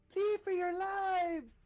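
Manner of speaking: very high, primal, shrill shriek. A player's character shouts a warning after rolling a two; high-pitched yell. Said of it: "a high pitched voice".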